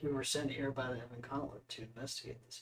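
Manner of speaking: hushed, very quiet, low undertone. Asked why they are here, the player's character answers, lowered voice. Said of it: "I'll lower my voice and say".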